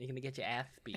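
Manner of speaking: little lisp on the s sound in ass. Doing an impression after a quote, with a little lisp: Mike Tyson impression with lisp. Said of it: "I really wanna do, like, a Mike Tyson impression".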